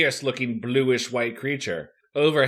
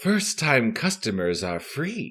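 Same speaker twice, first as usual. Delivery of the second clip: whispered, very quiet. Reading a story aloud, the giant woman running an arcade speaks, whispering. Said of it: "she whispers".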